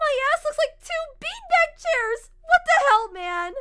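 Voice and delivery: very loud, shrill, high-pitched screaming outburst. Narrator voices Yuri's outburst once the inflation stops, screaming.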